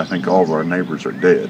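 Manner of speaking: plain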